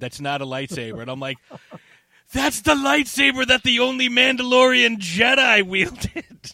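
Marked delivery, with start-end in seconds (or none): 2.3-6.5 very high, gushing, excited, eager enthusiasm. Recounting your past reply after she asked why you were excited, retelling your excited outburst. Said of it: "why are you getting all excited".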